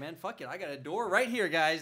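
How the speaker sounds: ordinary talk, nothing marked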